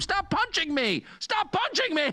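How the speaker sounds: very high-pitched, far-off mock scream. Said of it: "hit you in the face and scream".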